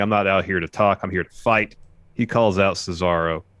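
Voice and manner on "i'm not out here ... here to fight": plain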